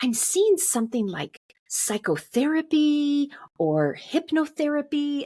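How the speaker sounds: very high voice with slow, dragged-out words. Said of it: "she even said it like that, like dragon".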